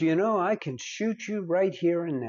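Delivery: ordinary delivery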